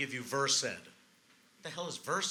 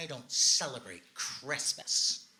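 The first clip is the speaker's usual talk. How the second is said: irritated, put-out, pissed-off tone. Retelling an older woman's reply at a restaurant door: imitating a pissed-off woman. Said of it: "pissed off".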